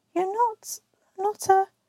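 trembling, shaky, very high-pitched voice. Narrator reads a character's unfinished question, in a shaky voice. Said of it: "asked Susan in a shaky voice".

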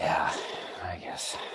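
defeated, deflated, soft, breathy beaten-down tone. Conceding a Star Wars point to the other speaker, sounding defeated. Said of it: "You sound so defeated".

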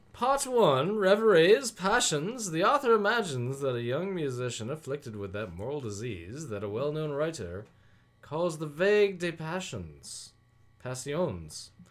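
put-on posh British accent. Reading program notes aloud as asked: put-on posh british accent.

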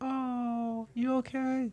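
high, soft, worried put-on voice.

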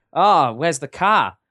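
Aussie-style pronunciation. Comparing how different countries say the same question, in australian accent. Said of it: "in Australian, they say like".

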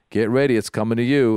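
ordinary talk

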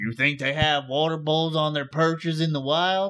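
put-on Southern accent from North Georgia. Retelling a rude commenter's remark on their video, in a North Georgia accent. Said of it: "He's from North Georgia".

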